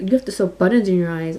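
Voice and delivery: ordinary talk, nothing marked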